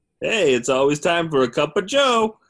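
high, loud, belted sing-song, swooping up high. Setting up a scene, then doing an impression: Joe from Family Guy voice. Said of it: "That was the impression".

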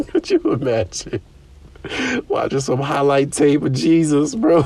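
laughing hard, cracking up through the words. On a podcast, cracking yourself up at your own joke, laughing hard. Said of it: "I'm crying, dude. I'm about to pee on myself".

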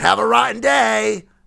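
rough, high-pitched, creaky, raspy voice. Retelling a farewell called out while walking away: Oscar the Grouch voice. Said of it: "he called to me in Oscar's voice".

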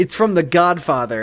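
ordinary delivery

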